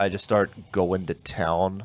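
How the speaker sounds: normal talking voice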